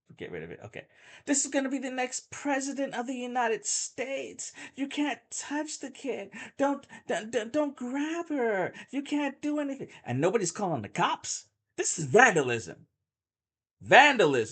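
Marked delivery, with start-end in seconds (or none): 1.3-9.9 very high, shrill yelling. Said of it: "someone is yelling".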